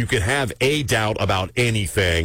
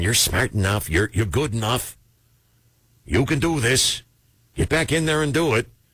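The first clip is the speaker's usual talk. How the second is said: broad, thick, laid-on put-on New England accent; 3 semitones higher than usual. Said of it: "the New England accent and the thick accent".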